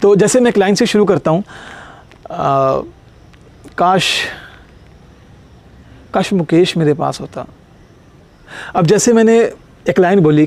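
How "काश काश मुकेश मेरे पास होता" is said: two-to-three-second pause after काश. Teaching about pauses with a single line, long pause after काश. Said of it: "काश और मुकेश के बीच के बाद मैंने दो सेकंड का या तीन सेकंड का एक पॉज लिया".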